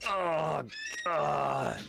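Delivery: whimpering in pain. A game narrator voices an injured man who just bellowed in pain, whimpering. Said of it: "he's just like whimpering".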